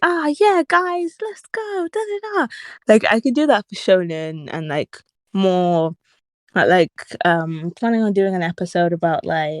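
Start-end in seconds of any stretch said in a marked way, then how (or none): 0.0-2.5 very high, hyped-up, really upbeat voice. Showing the upbeat voice that does not fit this sad series: really upbeat voice. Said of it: "really upbeat".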